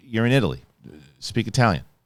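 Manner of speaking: usual speaking voice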